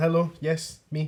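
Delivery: piping up, speaking up for oneself. Showing how someone should speak up to get noticed, piping up. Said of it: "you need to pipe up and be like".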